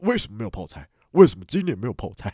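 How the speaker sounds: put-on furious bellowing, loud angry roar. Speaker recounts their dad finding no kimchi on the table: retelling an angry roar. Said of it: "他就怒吼".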